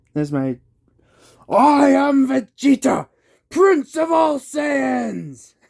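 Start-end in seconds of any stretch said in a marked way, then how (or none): 1.4-5.5 very high, very loud, slow, drawn-out anime villain voice. Talking about Goku and Vegeta, doing a terrible Vegeta impression. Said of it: "terrible Vegeta impression".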